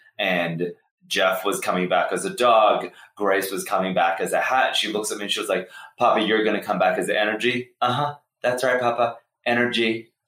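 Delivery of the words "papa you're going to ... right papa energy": sassy, pitched-up know-it-all attitude. Retelling what Ava said at the dining table: imitating Ava being sassy. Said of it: "all sassy".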